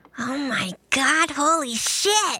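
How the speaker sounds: slow, drawn-out, hushed mutter under the breath. A tabletop player voices their character Finny's reaction, muttered under his breath. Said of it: "says that under his breath".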